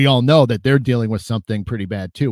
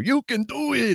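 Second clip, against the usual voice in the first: put-on squeaky voice, very high, very slow, drawn out; 13 semitones higher, 4 dB quieter than usual. Quoting the immortal words of Rob Schneider, Rob Schneider voice. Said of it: "I even did the voice for you too".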